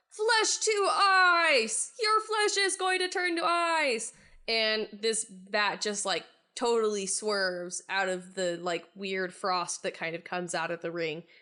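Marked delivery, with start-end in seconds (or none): 0.2-4.1 high battle-cry shout with "ice" drawn out. Raising a ring to the sky and casting a spell, shouting. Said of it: "and you shout".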